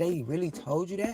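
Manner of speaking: trembling, shaky, high, rushed voice close to tears. Retelling what she said after pulling over, almost crying: retelling own shaky voice. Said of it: "Voice shaky and all".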